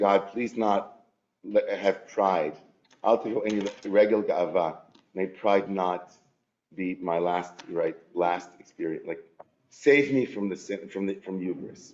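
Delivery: plain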